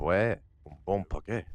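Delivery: low-pitched put-on French accent. A speaker who has never been to France tries a French accent. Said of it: "That's my French accent".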